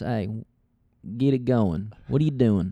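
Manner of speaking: put-on Southern accent with drawl. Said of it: "it's a easy comedy voice".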